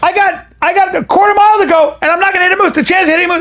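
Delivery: mock, full-on, frantic freaking-out screaming. Retelling a drive with a crying daughter in the car, retelling a scream. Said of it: "I started screaming about the moose".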